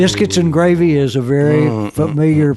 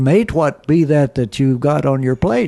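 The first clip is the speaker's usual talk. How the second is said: put-on Australian accent with broad vowels. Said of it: "That was good".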